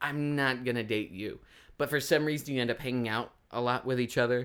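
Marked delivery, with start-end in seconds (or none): none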